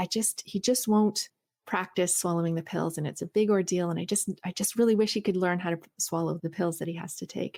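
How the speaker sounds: ordinary talk, nothing marked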